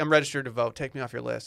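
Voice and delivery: ordinary talk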